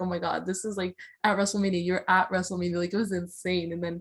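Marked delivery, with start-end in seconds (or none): none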